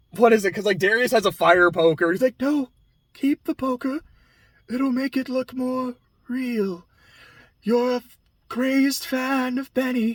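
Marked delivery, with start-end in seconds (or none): 2.4-10.1 soft, airy, breathless put-on voice. Retelling a scene where someone has a fire poker: breathless airy voice. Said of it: "It's this very breathless, airy voice".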